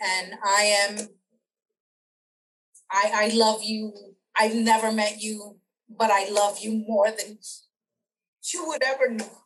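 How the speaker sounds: crying, tearful voice. Interviewer addressing a guest never met before, crying. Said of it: "I'm not crying because I'm sad".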